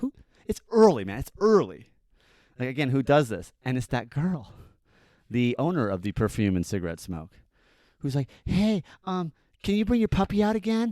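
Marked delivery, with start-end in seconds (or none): 8.4-10.9 put-on very high, childlike little-kid voice. Retelling a neighbour knocking early to ask for the puppy: imitating someone asking like a kid. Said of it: "asking me like a kid".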